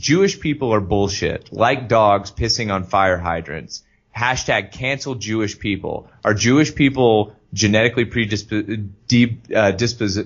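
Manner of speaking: ordinary talk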